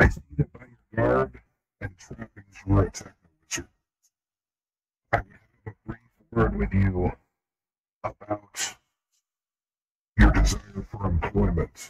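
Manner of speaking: loud, eerie, creepy mad monk character voice. Voicing the mad monk speaking to a techno wizard: creepy mad monk voice. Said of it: "in that, uh, creepy voice".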